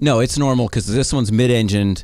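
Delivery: ordinary talk, nothing marked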